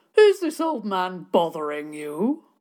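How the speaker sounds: big, carrying booming voice with swooping pitch. Narrator reads a man calling out from behind the children: booming voice. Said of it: "A booming voice came from behind the children".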